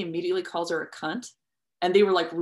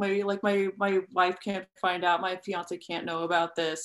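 weepy, pathetic, blubbering, crying voice. Retelling a pathetic character's panic about his fiance: mock blubbering as Al Monroe. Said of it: "and just blubbering and crying".

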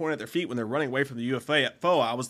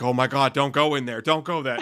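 put-on frantic, delirious woman's voice, louder; 4 dB louder than usual. Retelling a woman coming out of a theater warning them away: imitating a delirious woman. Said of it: "she's, like, delirious".

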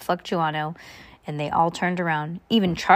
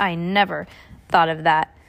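ordinary delivery

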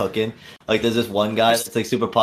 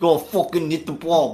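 pitched-up Italian American dad voice; 7 semitones higher than usual. Describing a dad yelling at the baseball game, in an Italian American dad voice. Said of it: "your Italian American dad at the baseball game".

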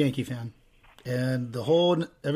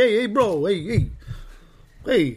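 put-on high, drawn-out East Coast accent; 5 semitones higher than usual. Mocking East Coast people's weird accent: imitating an East Coast accent. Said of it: "they have a little weird accent. They're like".

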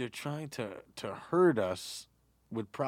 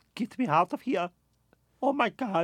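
very slow, drawn-out, raised, high exclamation; 9 semitones higher, 6 dB louder than usual. Acting out a wife who wants out: imitating Melania Trump. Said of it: "And then Melania's like".

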